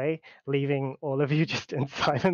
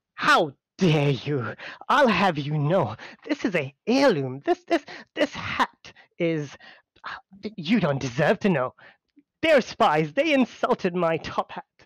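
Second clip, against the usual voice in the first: aghast, insulted, appalled high-status noble voice; 2 semitones higher, 3 dB louder than usual. Voicing a top-hatted noble insulted about his hat: appalled, insulted noble. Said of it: "hand on chest and just appalled".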